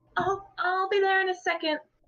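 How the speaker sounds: small, very high voice calling out. A girl calls out from inside as the visitor knocks, in a small voice. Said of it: "You hear her small voice call out".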